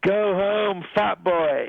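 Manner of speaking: high, very slow, drawn-out mock heckler's yell. Retelling how a fan in the crowd heckled the drummer: imitating a shouted heckle. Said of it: "so he shouts".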